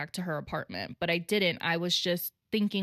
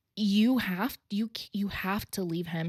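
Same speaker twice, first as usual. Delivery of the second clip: put-on tearful, crying, pleading voice. Retelling how a crying friend pleaded with her: imitating a friend's crying plea. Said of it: "my friend is pleading with me".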